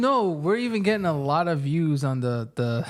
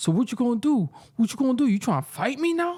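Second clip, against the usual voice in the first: mock aggressive, high-pitched, taunting rant; 7 semitones higher than usual. Retelling what a man on the train said to himself: imitating a man cursing to himself. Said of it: "and he's cursing".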